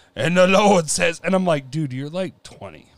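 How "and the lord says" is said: booming, loud, intoning preacher voice. Mocking young TikTok creators who use a preaching style: preacher voice. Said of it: "the preacher voice".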